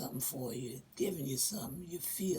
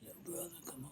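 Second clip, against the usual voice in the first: deep, very quiet, soft voice; 14 dB quieter than usual. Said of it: "he gave me the deep voice like this".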